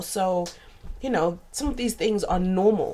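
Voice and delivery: plain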